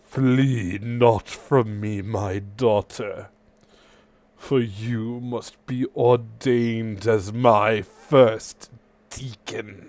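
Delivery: thunderous, booming, resounding god voice. Game narrator voicing the being whose elemental hand reaches down, in a booming voice. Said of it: "You hear a booming voice".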